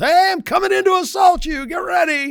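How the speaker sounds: high, loud yelling. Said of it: "yell at the house".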